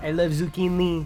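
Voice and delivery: goofy, silly put-on French accent. Showing how some lines are said, in a silly French accent. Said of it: "said in uh in a silly French accent".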